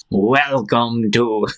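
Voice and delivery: creepy, spooky put-on showman announcer voice. Retelling a costumed guy with a microphone greeting visitors, creepy voice. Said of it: "like with a creepy voice".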